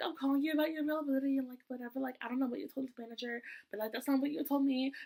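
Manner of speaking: angry, attitude-filled rant. Retelling a phone call with a manager: imitating someone going off. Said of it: "And she started going off".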